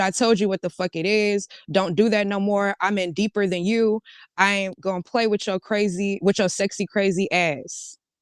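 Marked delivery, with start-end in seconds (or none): none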